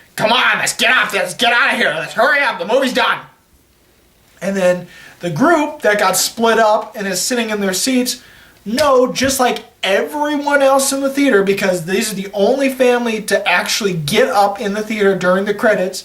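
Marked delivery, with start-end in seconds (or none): 0.2-3.3 put-on dad voice yelling, calling out. Retelling a theater scene, speaker acts out a father yelling at the girls. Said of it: "the father's yelling at the girls".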